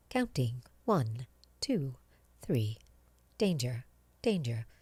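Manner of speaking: machine-like, robotic computer voice. Voice actor demonstrates the voice used for the game Doom: computer voice. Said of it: "my voice there was just more like computer voice".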